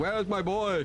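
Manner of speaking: anxious, frantic, high-pitched cry. Retelling running around looking for a lost boy: retelling a scream. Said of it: "I'm running around screaming".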